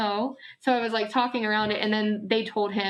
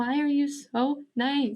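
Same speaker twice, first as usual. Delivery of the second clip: put-on slow, tearful, pleading voice through crying; 4 semitones higher than usual. Retelling crying early on when dating again: imitating own past crying. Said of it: "cry and be like".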